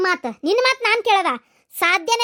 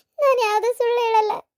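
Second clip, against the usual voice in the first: tearful, sobbing voice. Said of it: "ಅಳ್ಬೇಡವ್ವ".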